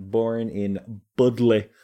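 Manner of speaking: put-on northern English accent. Podcast host recounting Salem history, naming where a settler was born, northern accent. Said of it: "I'm using a northern accent there".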